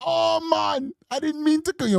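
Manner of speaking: Jamaican-sounding voice. Speaker impersonates his mother on the phone, apologising for accidentally calling him. Jamaican accent. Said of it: "My mother got that Jamaican accent".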